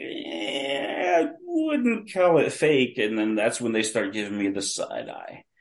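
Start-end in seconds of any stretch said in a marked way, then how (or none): 0.0-3.0 high, slow hedging tone. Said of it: "I'm like".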